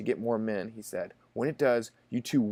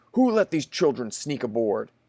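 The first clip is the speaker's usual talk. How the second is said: severe, stern, raised voice; 5 dB louder than usual. Narrator reading the commander-in-chief questioning rowers about stowaway children, stern voice. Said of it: "he asked in a stern voice".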